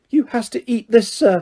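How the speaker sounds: high, squeaky elf voice. Narrator reading the elf Dobby answering Harry, squeaky Dobby voice. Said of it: "squeaked the elf".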